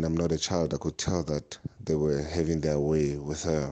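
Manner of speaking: usual speaking voice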